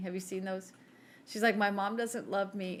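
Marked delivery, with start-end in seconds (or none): 1.6-2.8 put-on crying voice, complaining tone. Describing a meme to a listener, the speaker imitates the woman in it crying. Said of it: "And she's crying".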